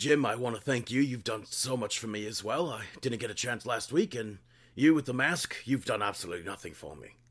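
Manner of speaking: put-on British commentator voice. Quoting the commentator thanking Jim: William Regal impression. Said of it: "he's like".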